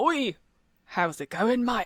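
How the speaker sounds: put-on Cockney London accent. Retelling meeting someone from her hometown, the speaker imitates his Cockney accent. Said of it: "someone from my hometown who should have had the same accent as me was Cockney".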